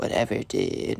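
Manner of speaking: muttered, near-whispered mumble under the breath. Retelling the spoiled kid's reply to the teacher, mumbling under his breath. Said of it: "Mumbles under his breath".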